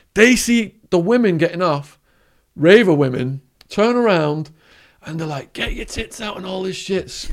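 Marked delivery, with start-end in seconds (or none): 5.5-6.3 breathy, crude, rowdy jeering, acted whisper. Retelling how rowdy men in a jail queue screamed at women: imitating men screaming. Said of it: "screaming at 'em".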